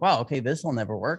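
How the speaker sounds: usual speaking voice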